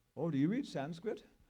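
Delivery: loud put-on German accent, professor-style voice. Retelling what a professor asked in the law library: imitating a german accent. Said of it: "kind of with a German, German, German accent".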